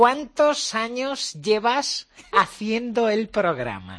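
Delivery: high squeaky put-on interviewer voice.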